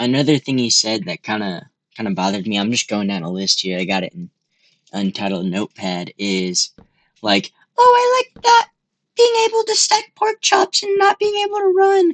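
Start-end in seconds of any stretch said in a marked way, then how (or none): 7.8-12.1 very high, shrill, mocking parody tone. Quoting a critic's comment about old Minecraft: imitating someone mockingly. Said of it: "he says it kinda, like, mockingly".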